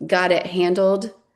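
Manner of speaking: ordinary delivery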